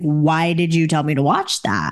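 ordinary delivery

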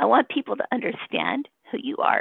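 moved, emotion rising partway through the sentence. Telling Kevin about the recommendation letter written for him: getting emotional. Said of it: "I'm getting emotional".

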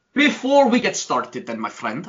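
sudden fake Russian accent. Host getting the next segment started with a co-host: put-on russian accent. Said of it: "I don't know why I went Russian".

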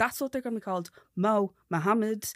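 very loud, thick, strong Dublin brogue. Teasing him about the baby names he suggests, saying them in a strong Dublin accent. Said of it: "I'd say it in a strong Dublin accent".

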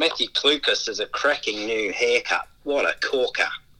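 put-on Australian accent. Asked by the host to say a sentence in his best Australian accent: Australian accent. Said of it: "in your best Australian accent".

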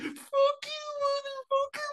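mock, very high squawking shout. Retelling a guy shouting into the night at his neighbor, imitating shouting. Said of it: "he was just like shouting into the night".

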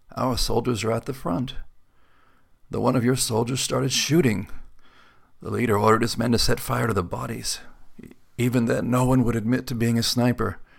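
whispering, leathery voice. Narrating an old man telling the sergeant what happened, in a leathery whisper. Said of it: "His voice a leathery whisper".

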